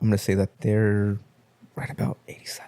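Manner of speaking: whispering. Guessing the audience score for a movie, whispering. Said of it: "Why'd you whisper that?".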